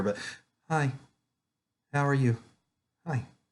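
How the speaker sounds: relaxed and calm. Greeting kids over a webcam, real calm. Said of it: "He's real calm".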